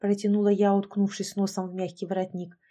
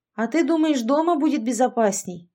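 sarcastic, snide, needling little jab; 4 semitones higher, 3 dB louder than usual. Sasha replies to the narrator, who asked why they were brought here; snide question. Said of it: "ехидно поинтересовался Саша".

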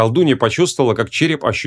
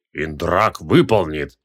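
deep, rumbling, growling voice; 6 semitones lower than usual. Told to guard the little captive, he agrees: growled. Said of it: "прорычал Девкаце".

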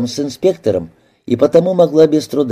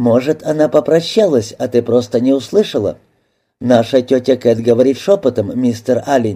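plain reading voice

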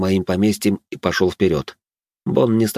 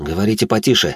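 usual speaking voice

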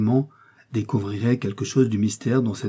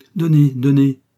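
brisk, urgent, quick, higher and louder; 4 semitones higher, 8 dB louder than usual. A narrator reads Paulin Broquet speaking, brisk and urgent. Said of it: "dit vivement Paulin Broquet".

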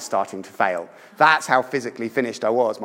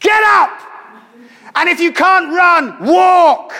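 very high, very loud, slow, drawn-out bellow; 9 dB louder than usual. Speaker retells their dad urging them on when they couldn't get up: bellowing shout. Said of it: "and he bellows".

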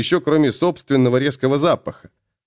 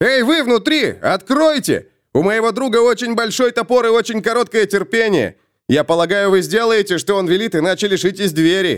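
full-on yell, high and raised; 7 semitones higher than usual. Felix calls through the door to the people inside the tavern, shouting. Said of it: "перешел на крик".

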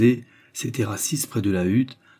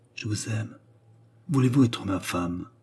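low, hushed, muffled, muted voice; 4 dB quieter than usual. Narrator reads the man's words to the young woman in his arms: low, muffled voice. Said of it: "dit-il d'une voix sourde".

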